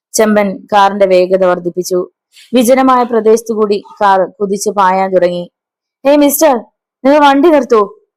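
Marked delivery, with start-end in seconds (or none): 6.0-7.8 frightened, fearful voice, higher pitch. Reading a story aloud, the doctor tells the driver to stop: voice full of fear. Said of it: "ഭയം നിറഞ്ഞ ശബ്ദത്തിൽ പറഞ്ഞു".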